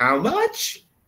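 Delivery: voice climbs at the end of much. Showing how a question sounds: rising intonation on question. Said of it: "the intonation always goes up at the end".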